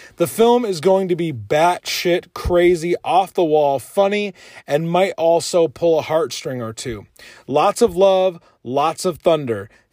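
ordinary delivery

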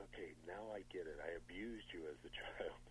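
put-on whispering voice. Retelling what Donald Pleasence whispered during a scene: imitating Donald Pleasence whispering. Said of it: "he whispers to me".

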